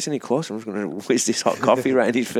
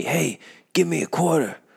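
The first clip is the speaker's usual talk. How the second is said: mock shouting, much higher pitch; 6 semitones higher than usual. Recounting a man who started shouting at him, imitating a man shouting. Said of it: "he starts shouting at me".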